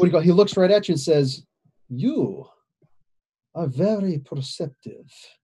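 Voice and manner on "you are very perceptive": bad Transylvanian accent, very slow and hushed. Your character looks right at the listener and speaks in a bad Transylvanian accent, Dracula voice. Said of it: "bad Transylvanian accent".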